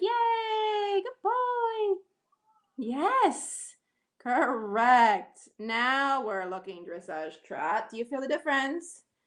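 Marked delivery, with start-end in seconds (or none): 0.0-2.0 very high, drawn-out cheering voice. Speaker shows the listener how to praise the horse: high-pitched praising voice. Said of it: "Make a high pitched with your voice".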